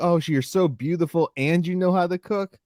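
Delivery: sweet, affectionate tone. Explaining that a man meant his remark as praise; retelling a fond compliment. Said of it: "He was saying it as a compliment".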